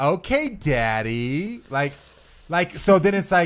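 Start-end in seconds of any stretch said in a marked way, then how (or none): 0.0-1.6 play-acted lightly teasing, playful tone, words drawn out. Retelling the second way she might have said it: imitating her playful tone.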